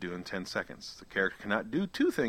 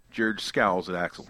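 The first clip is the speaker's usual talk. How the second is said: ordinary talk, nothing marked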